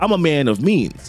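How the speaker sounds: usual speaking voice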